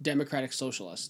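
plain

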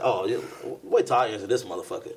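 normal talking voice

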